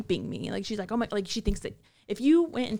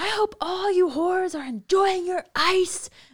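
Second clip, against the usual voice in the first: mock yelling, much higher and louder; 11 semitones higher, 6 dB louder than usual. Retelling what a woman yelled in the building, imitating someone yelling. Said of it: "she was yelling in the building".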